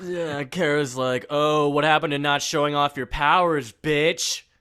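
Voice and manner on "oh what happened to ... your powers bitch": put-on annoyed voice, higher and louder. Acting out a character's retort in a recap: imitating Kara sounding annoyed. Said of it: "And so she's annoyed".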